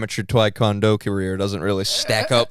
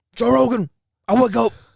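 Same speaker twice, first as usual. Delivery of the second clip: very high-pitched, rough voice; 13 semitones higher, 4 dB louder than usual. Doing an impression of a screaming runner for the others: David Goggins voice. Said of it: "He talks like this".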